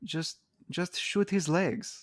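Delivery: botched put-on German accent. Quoting a remembered Vine clip, in a botched German accent. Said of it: "I was going for German, and then I did not hit German at all".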